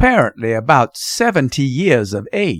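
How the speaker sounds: ordinary delivery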